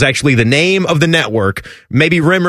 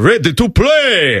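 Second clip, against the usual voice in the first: put-on heavy, thick Romanian accent, pitched up; 5 semitones higher than usual. Recalling network voice work, the speaker quotes George in a thick Romanian accent. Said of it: "with his thick Romanian accent".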